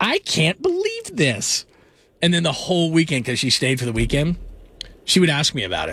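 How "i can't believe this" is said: very high, sing-song, drawn-out disapproving voice. Retelling a mother's reaction to visiting the show's studio, imitating disapproving mom. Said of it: "My best mom impersonation".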